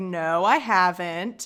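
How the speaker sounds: put-on childish little-kid voice, like a toddler. Retelling Gollum's denial to Sam: retelling like a toddler. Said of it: "like a toddler".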